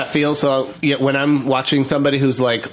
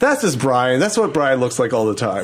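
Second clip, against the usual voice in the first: plain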